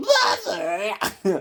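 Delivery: very high-pitched goblin voice crying out. Acting out the Goblin Prince answering his mother: voicing the Goblin Prince. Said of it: "And he's like".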